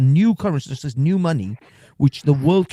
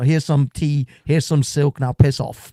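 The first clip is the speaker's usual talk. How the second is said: ordinary talk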